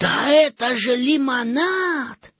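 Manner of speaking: astonished cry, very high pitch, drawn out. A boy sips from a fountain in the garden and cries out: surprised exclamation. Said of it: "удивленно воскликнул".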